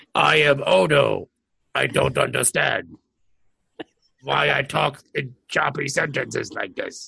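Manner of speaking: put-on puppet-style monster voice. Performing a bit for the others, who react: Odo impression, Cookie Monster-like. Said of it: "Now he's starting to sound like Cookie Monster".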